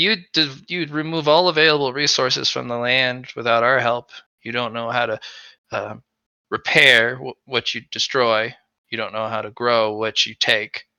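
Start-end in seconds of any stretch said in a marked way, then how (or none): none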